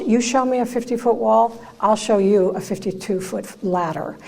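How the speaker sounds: plain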